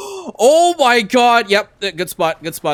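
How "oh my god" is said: sudden, very high, loud shriek. Spotting a really good spot for a Tabulus: screaming. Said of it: "I screamed in your ear".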